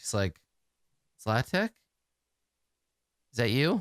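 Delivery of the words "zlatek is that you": drowsy, groggy, just-woken sleepy voice. Voicing a character turning over in bed: sleepy Leanna voice. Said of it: "she says sleepily".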